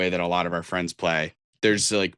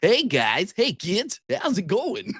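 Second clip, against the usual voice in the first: put-on very high, goofy, kooky old man voice, swooping pitch; 14 semitones higher than usual. Discussing story tropes, speaker acts out the kooky old man, kooky fun old man voice. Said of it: "the kooky fun old man who's like".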